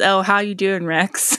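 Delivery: ordinary talk, nothing marked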